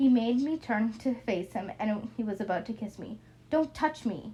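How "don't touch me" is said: mock chilly, icy voice, pitched up. Reading a story where the narrator stops a man about to kiss them, cold, icy voice. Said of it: "in a cold, icy voice".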